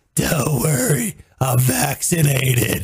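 put-on heavy smoker's voice. Retelling what a lady told the speaker, in a total smoker voice. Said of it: "total smoker voice was like".

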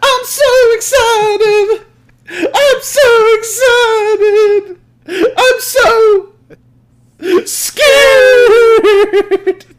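very high pitch, stretched very slow, drawn-out delivery. Acting out the study pills episode: imitating Saved by the Bell scene. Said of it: "Saved by the Bell with the, ... study pills".

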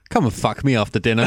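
ordinary talk

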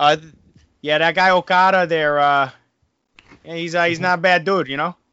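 put-on Boston-sounding accent. Asked to do the voice again, the speaker attempts it: Boston-sounding accent. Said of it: "Why do you sound like you're from Boston?".

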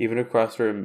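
plain

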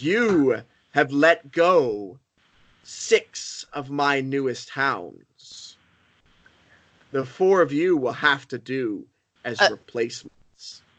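grand, weighty, lordly tone. Voicing a figure who glares and addresses the group, booming, loud voice. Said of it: "in this booming, loud voice".

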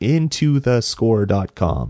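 very slow, careful, deliberate, word by word. Giving a website address after stumbling over it: said really slowly. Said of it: "I'll say it really slow".

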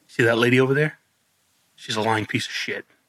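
secretive, conspiratorial, hushed half-whisper. Retelling what a resident said into his ear: imitating a half-whisper. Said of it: "She whispers in my ear".

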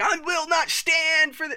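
very high, slow, put-on sarcastic outrage tantrum. Retelling how a man threw his sarcastic tantrums: mock sarcastic tantrum. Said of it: "or his sarcastic tantrums, where he's like".

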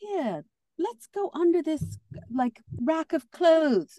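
put-on roughly done British accent, lifted up in pitch. Telling how she hid from other models, imitating Naomi's British accent.

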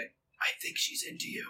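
said quietly. Elbowing Leon and telling him, said quietly. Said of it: "but quietly say".

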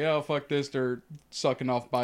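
normal talking voice

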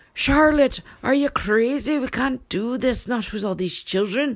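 high, loud, alarmed voice. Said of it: "Or maybe the husband's like".

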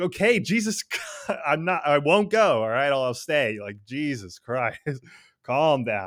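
put-on exasperated tone. Recounting a story, voicing a character who gives in to another's pleading, worn out by the fuss. Imitating exasperation. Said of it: "exasperated Sanji giving in".

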